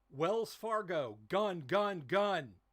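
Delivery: very loud, high, top-of-the-lungs yell. Showing the warning yelled to the armored car guys, yelling at the top of lungs. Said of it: "at the top of my lungs, yell".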